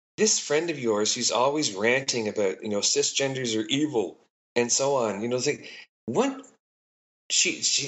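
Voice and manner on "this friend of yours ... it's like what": ordinary talk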